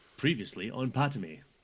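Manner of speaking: TV announcer voiceover voice. Taking a turn recording the show's recap intro, in a voiceover voice. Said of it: "That was my voiceover voice".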